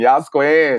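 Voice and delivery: high, loud, yelled cheer of approval. Imitating adorable little suburban girls cheering: imitating girls yelling. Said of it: "living their life yelling".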